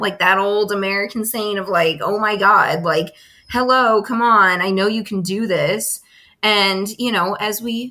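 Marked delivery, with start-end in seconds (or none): 2.0-6.0 mock exasperated, annoyed nagging tone. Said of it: "the unhealthy, mean communication".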